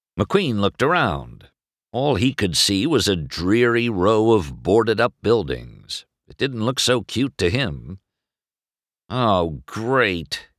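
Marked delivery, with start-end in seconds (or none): 9.1-10.5 dry, mocking sarcasm. McQueen, told he is in the cutest little town, answers sarcastically. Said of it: "he said sarcastically".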